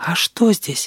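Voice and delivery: timid, high little whisper. The grasshopper, looking at his new amulet, asks Sedoy in a whisper. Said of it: "спросил он шепотом".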